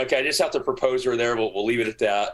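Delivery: ordinary delivery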